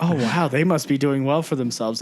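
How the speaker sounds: plain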